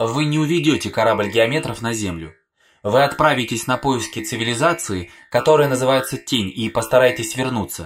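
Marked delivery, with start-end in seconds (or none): none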